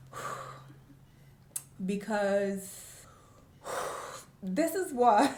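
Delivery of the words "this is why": higher, slow tearful voice. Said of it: "If I'm crying".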